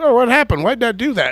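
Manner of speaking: high, loud mock reporter voice, clueless. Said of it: "these stupid reporters".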